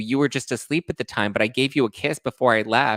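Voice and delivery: ordinary talk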